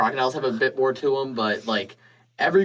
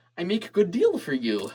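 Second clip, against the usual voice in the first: put-on silly, pitched-up high voice; 5 semitones higher than usual. Describing the Ravens from a show, the speaker imitates them: silly Ravens voice. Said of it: "they talked in a silly voice".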